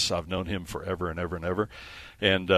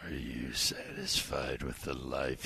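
mock-sinister, much lower, quieter, slower; 6 semitones lower, 10 dB quieter than usual. Mocking the questioner, the speaker repeats their question in a mock-sinister voice. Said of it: "when they get into that sinister voice".

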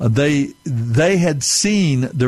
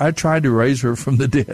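ordinary talk, nothing marked

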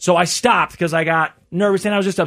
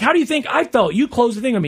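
mock heated, full-on, high-pitched angry arguing; 6 semitones higher than usual. Retelling a pharmacy argument that turns into a fight: imitating an angry employee arguing. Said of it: "Now they're full on fighting".

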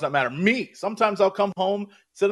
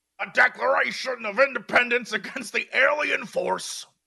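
put-on ranting pundit voice, higher pitch; 4 semitones higher than usual. Quoting a movie speech line in an Alex Jones voice. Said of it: "that's my Alex Jones voice".

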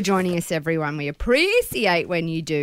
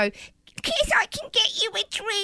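mocking baby-talk voice, very high, slow and cutesy; 3 dB quieter than usual. Retelling how he imitates her asking for a drink, the speaker uses a mocking put-on cutesy voice. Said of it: "Like to imitate me back".

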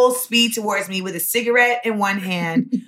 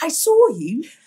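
high-pitched, fake, put-on British accent; 6 semitones higher than usual. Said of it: "not cool with the accent all the time".

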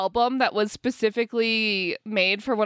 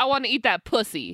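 normal talking voice

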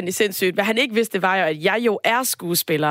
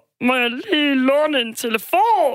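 thick, muffled put-on knödel voice, much higher; 5 semitones higher than usual. Imitating an actor in a fox-tail hat asking to borrow a phone, put-on dumpling voice. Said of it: "han talte med sådan en, en knødelstemme".

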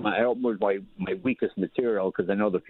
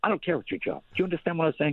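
high-pitched bellowing, yelling harshly; 7 semitones higher than usual. Retelling a general scolding him backstage: imitating a general yelling. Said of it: "he's just yelling at me".

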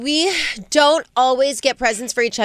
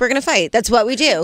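plain

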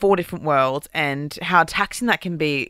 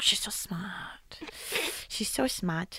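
put-on breathy, whispered, soft, slow baby voice; 2 semitones higher, 12 dB quieter than usual. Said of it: "baby voice vibes".

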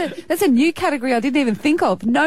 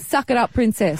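usual speaking voice

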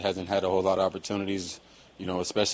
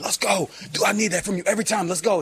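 shrill, very high-pitched screaming shout; 13 semitones higher, 4 dB louder than usual. Retelling shouting at a teammate back in the huddle: imitating own past screaming. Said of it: "I'd be screaming".

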